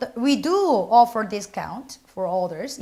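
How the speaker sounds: slow reading with strong stress on "do".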